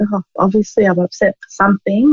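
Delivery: normal talking voice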